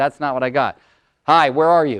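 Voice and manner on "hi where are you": put-on brisk, curt tone. Retelling a phone call from a wife, imitating wife's brisk D voice. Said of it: "she's got her D voice on".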